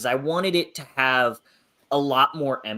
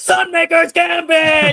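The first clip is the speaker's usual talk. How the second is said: put-on yell, higher and louder; 9 dB louder than usual. Retelling a reaction while reading: imitating own past shout. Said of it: "shouting at the top of my lungs".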